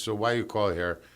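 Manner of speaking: put-on heavy Spanish accent. Retelling a phone call, he quotes the Board of Health lady in a heavy Spanish accent. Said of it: "she had the heaviest accent".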